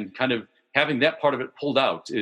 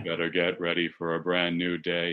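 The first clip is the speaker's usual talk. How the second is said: put-on morose spoken-word reading, lower and quieter; 7 semitones lower, 5 dB quieter than usual. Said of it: "Read 'em in morose [name] style".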